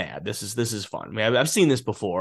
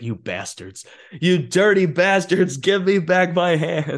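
mock high yelling, building and climbing in pitch; 8 semitones higher, 4 dB louder than usual. Recounting how a character reacts on realizing what happened, retelling a yell. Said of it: "he just starts yelling".

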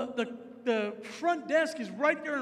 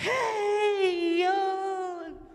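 mock super happy, bubbly, pitched-up voice, "yo" drawn out; 5 semitones higher than usual. Retelling how a bubbly lady greeted him: imitating a super happy, bubbly lady. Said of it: "Just super happy".

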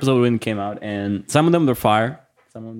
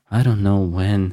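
mock-sad put-on voice in a lower pitch; 3 semitones lower than usual. Imitating how Ari sounds when he gets sad, imitating Ari's sad voice. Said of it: "And he sounds like this".

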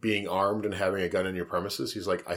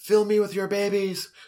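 sudden mock scream, very high shriek; 12 semitones higher, 4 dB louder than usual. Retelling to listeners what a woman screamed during sex, imitating her scream. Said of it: "she just screams out".

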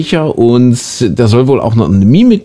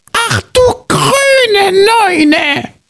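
very high-pitched voice with grüne drawn out. Quizzing a listener on who is being imitated, doing a guess-who impression. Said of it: "wen ich jetzt versuche zu imitieren".

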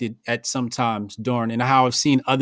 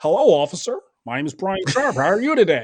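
polite, proper-sounding put-on voice, pitched up; 6 semitones higher than usual.

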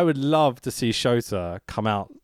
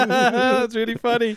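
high, slow, amused deadpan delivery. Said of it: "And I'm like".

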